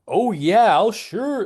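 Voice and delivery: sarcastic, very high-pitched voice. Imitating actors delivering a line badly: imitating a sarcastic voice. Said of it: "they're kind of doing a sarcastic voice".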